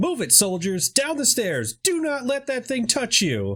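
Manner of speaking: high-pitched, crackly voice as over a loudspeaker. Narrating a game scene, voicing the announcer over the PA system: crackling PA-system voice. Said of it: "you hear a crackling voice over the P A system".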